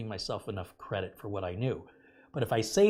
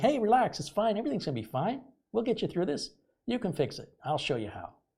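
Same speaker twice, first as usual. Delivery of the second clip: very high, swooping, cheery, soothing, upbeat voice; 11 semitones higher than usual. Retelling how he answered a frustrated customer on a call, retelling an upbeat tone. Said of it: "you sound awfully upbeat".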